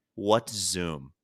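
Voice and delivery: acted, low, bone-dry, expressionless deadpan. Retelling what a man said while looking them in the face: retelling a deadpan reply. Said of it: "deadpan looks me in the face and goes".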